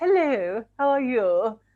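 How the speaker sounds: very strange, put-on posh voice. Retelling her nan greeting her boyfriend: imitating nan's strange posh voice. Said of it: "my nan put on a very strange voice".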